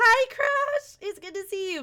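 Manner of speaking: loud, voice breaking and cracking very high. Greeting someone called Crush, your voice cracking. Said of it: "My voice cracked".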